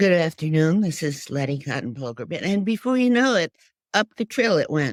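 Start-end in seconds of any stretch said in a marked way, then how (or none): 0.0-2.4 forced fake voice pushed as low as possible. Retelling how the speaker used to fake it for activism, forcing voice deep. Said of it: "getting myself as deep to, as I could".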